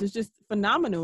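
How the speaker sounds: ordinary delivery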